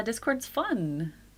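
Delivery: fake-friendly delivery. A streamer mentions their Discord in a forced friendly tone. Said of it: "Did that sound so fake? I was trying to make it friendly".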